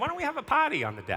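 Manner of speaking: put-on very high voice with a thick, broad Boston accent. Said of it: "my mom's got a very thick Boston accent".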